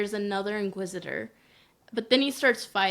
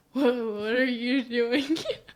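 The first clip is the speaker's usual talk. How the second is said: mock stuttering voice; 2 semitones higher than usual. Retelling a scene where an Inquisitor intimidates a stormtrooper: imitating a stuttering stormtrooper. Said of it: "stuttering and is like".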